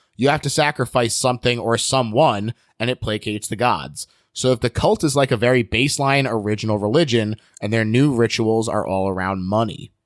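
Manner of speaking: ordinary delivery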